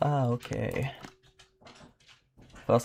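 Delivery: laughing while talking. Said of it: "I'm gonna stop laughing".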